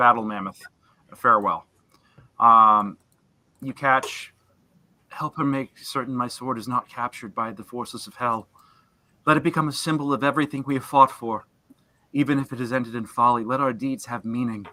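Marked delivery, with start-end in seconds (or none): 5.1-14.6 whispering character voice. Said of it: "Zariel whisper to her mammoth steed".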